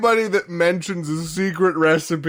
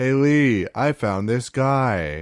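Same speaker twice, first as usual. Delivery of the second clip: low, flat, emotionless monotone; 6 semitones lower than usual. Mimicking an actress who isn't smiling or emoting, imitating a flat, unemotional read. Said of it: "she literally sounds like".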